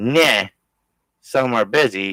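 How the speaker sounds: slow, mocking, disrespectful sarcastic drawl. Quoting someone's reply in a chat: imitating a sarcastic reply. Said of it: "is being sarcastic".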